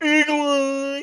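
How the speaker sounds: very high, loud, goofy, stupid-sounding voice. Retelling what the person in the truck said to the speaker, stupid voice. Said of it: "The person had a stupid voice".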